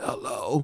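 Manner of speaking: drowsy, sleepy, half-asleep, just-woken voice. Retelling a call that woke the manager: imitating a sleepy-sounding manager. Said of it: "She always sounds like she's sleeping".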